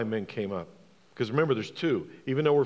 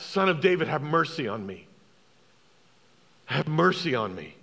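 put-on beggar's crying out, higher pitch; 3 semitones higher than usual. Retelling the blind beggar's plea to Jesus: imitating Bartimaeus crying out. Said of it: "he cried out".

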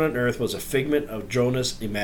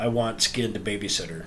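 put-on child whisper, quieter and lower; 3 semitones lower, 3 dB quieter than usual. Recounting the eldest child's answer about dinner, retelling a child's whisper. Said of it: "she whispers".

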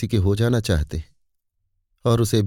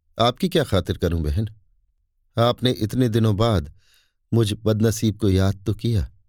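ordinary delivery, nothing marked

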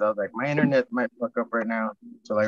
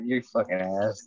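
put-on muttering under the breath. Retelling a reaction to another speaker's hot-weather boast: imitating muttering under breath. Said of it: "Under my breath".

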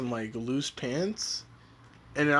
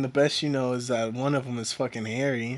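usual speaking voice

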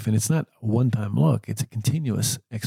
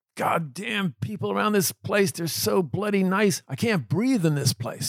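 acted-out very high top-of-lungs screaming rant; 9 semitones higher than usual. Retelling a man who screamed on entering his room: imitating a man screaming. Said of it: "he started screaming at me".

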